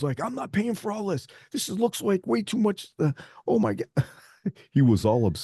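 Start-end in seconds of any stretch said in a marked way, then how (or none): 0.2-2.9 put-on very high-pitched, fuming, indignant, angry tone. Retelling how the man paying reacted when they showed up with the trailer: imitating an angry man. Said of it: "he was so mad".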